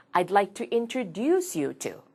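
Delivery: strong stress on introduce, rest swallowed and weak. Korean lesson on English sentence stress: stress on introduce. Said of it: "introduce에 힘을 준다는 건 아시죠?".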